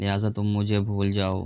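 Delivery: ordinary delivery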